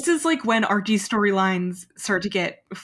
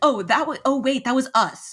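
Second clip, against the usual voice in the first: put-on sassy voice, higher pitch; 5 semitones higher than usual. Retelling a line from an episode: imitating Archie's sassy line. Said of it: "he has a sassy ass line where he's like".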